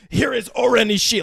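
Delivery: grand, overdramatic theatrical herald voice, high and rough. Retelling a scene, voicing the posse's entrance as a mock overdramatic announcement. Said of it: "they're so overdramatic".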